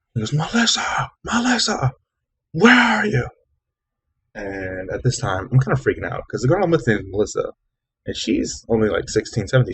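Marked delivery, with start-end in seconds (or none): 0.3-3.2 put-on man screaming, higher. Retelling how a huge guy came screaming for a girl: imitating a man screaming. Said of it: "this huge guy just comes screaming".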